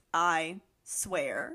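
mock low, flat, emotionless robotic monotone. Recapping a show's scene, the speaker imitates Carly and Sam: imitating Carly and Sam's monotone. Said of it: "in such a monotone voice".

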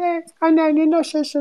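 put-on very high voice of a five-year-old. Phoning a grandmother who doesn't recognize them, imitating Kaan. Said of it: "Onun taklidini yapıyordum".

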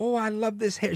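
put-on Jamaican accent, high and soft. Speaker imitates a woman who unboxes hair weaves, imitating Jamaican-type accent. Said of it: "Jamaican type of accent".

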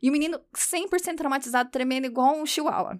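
plain

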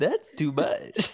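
dinosaur character voice. Joking about over-the-top boots in an episode, a Barney impression. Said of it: "That's my Barney impression".

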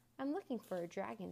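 ordinary delivery, nothing marked

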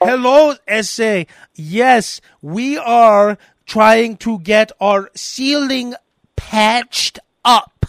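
very slow, condescending, dumbed-down over-explaining. Mocking people who dumb down english for a worker: imitating condescending dumbed-down english. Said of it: "you're just sounding like an asshole".

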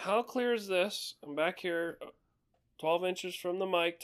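projected voice from far back, high, faint. Showing how to talk into a mic from a distance: talking loudly. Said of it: "talking loudly".

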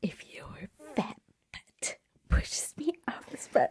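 hushed, breathy yelled whisper. Retelling how a sister yelled in a whisper: imitating a whispered yell. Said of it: "she yelled at me in her whispery breath".

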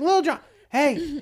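put-on high, loud, eager, drunken squealing.

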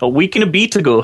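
put-on Scottish accent with "bit" pronounced like "beat". Repeating another speaker's phrase back to them: imitating a Scottish accent. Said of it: "You almost went Scottish then".

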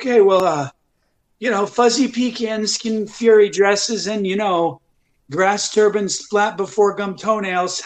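slow, meandering, rambling politician-at-the-mic delivery. Mocking a politician speaking at the mic: Joe Biden impression. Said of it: "a really good impression of Joe Biden".

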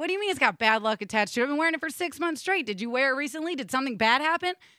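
ordinary delivery

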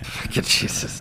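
soft, slow, under-the-breath mumbling. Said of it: "He's mumbling under his breath".

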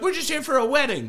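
put-on English accent. Retelling a parking-lot run-in, the speaker mimics what the group kept saying in their accent. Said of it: "Their accent changed".

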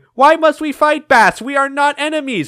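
very high, piping voice. Retelling a game's opening cutscene: high-pitched Mega Man voice. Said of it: "Mega Man in his high-pitched voice going".

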